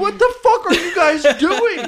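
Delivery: high, slow, laughing furious yell.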